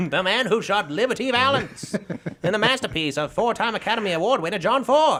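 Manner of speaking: put-on very high old-time baseball announcer delivery. Reading a classic movie poster aloud: old-time announcer voice. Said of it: "exactly what I imagine a baseball announcer sounds like".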